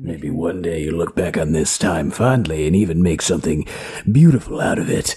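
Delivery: very low, deep, dropped monster character voice. Trying the voice after being urged to try it: Will Arnett hormone monster voice. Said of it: "I can't do Will Arnett".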